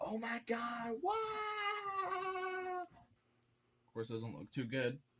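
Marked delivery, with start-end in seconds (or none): 0.0-2.8 overly happy, very high, slow, wow stretched out. Drawing the character overly happy and voicing him: imitating Bart Simpson overly happy. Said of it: "overly happy, where he's like".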